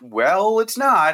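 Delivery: snippy, sarcastic delivery. Retelling their reply to the electric company: imitating own snarky reply. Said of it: "probably a little snarky".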